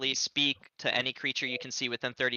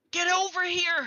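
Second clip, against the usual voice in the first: high, loud shout. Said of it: "John shouts".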